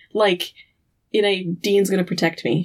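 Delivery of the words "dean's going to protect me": ordinary delivery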